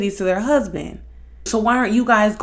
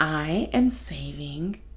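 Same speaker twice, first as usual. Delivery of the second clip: very soft, low, hushed, put-on woman's voice; 6 semitones lower, 9 dB quieter than usual. A speaker talking about dating imitates certain women, put-on voice imitating women. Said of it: "why am I doing that voice?".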